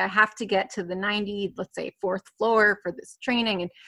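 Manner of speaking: ordinary talk, nothing marked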